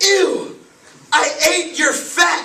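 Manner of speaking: very high, very slow, drawn-out full-lung screaming. Retelling screaming at a bus driver: imitating a scream at full volume. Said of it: "I screamed at the top of my lungs".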